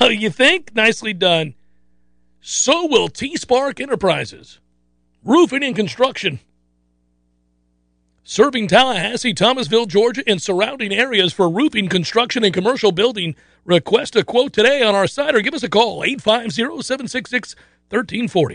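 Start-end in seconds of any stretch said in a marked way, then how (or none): 2.4-18.6 commercial radio ad announcer voice. Speaker reading a roofing company ad, radio announcer voice. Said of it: "no announcer voice here".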